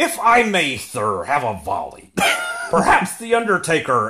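put-on wrestling announcer voice. Asked by another speaker to do the voice a little: Paul Heyman voice. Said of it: "I can't do the voice".

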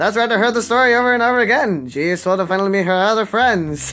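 put-on old-fashioned narrator voice. Reading a scripted line for fun in an old-timey narrator voice. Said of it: "an old-timey narrator".

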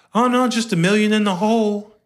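mock casual, offhand, nonchalant tone, very high pitch. Retelling what a dude told a coworker: imitating a nonchalant remark. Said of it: "he said it so nonchalantly".

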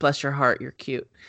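ordinary delivery

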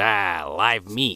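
monster creature critter-speech voice. Retelling a movie scene where the creatures speak: imitating critter speech. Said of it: "critter speech".

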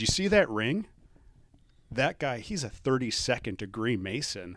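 full of reverent, awed admiration. Retelling what the dad said about a Mason at the funeral: imitating someone speaking in awe. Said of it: "he said it with such, like, awe".

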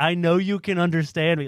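put-on loud yell. Retelling how the store owner yelled at a customer: imitating someone yelling. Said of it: "yelling at the guy".

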